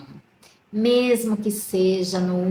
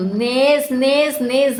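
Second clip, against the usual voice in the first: high-pitched shout, on the move; 6 semitones higher, 6 dB louder than usual. Retelling a farmer finding his bananas unharmed: imitating someone shouting. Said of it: "ele saiu gritando".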